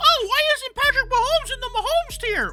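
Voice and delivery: very high cartoon voice. Ranking quarterbacks, voicing what everyone asks, Gingerbread Man voice from Shrek. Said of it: "Why did I sound like the gingerbread man".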